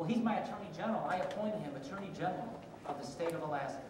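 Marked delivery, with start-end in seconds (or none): none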